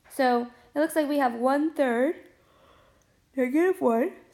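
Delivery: sleepy yawn mid-sentence. Recording a lesson late at night, plotting points on a graph, yawning while talking. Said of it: "Sorry for yawning".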